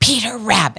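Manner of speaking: forceful swearing, full of conviction. Retelling mom's more intense swear word: imitating mom's intense swearing with conviction. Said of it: "With conviction".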